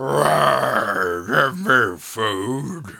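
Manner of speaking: very slow, loud, drawn-out hellish demonic voice. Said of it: "I was thinking more like a demonic voice".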